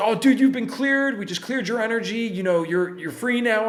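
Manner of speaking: acted, high-pitched, excitable, worked-up scream. Retelling what the buddy screamed in the car: imitating someone screaming excitedly. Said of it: "he's all excitable, and he's screaming".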